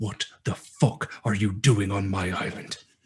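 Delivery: threatening draconic murmur. Voicing a dragon who pulls a player close: menacing dragon whisper in ear. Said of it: "big draconic snout in your ear goes".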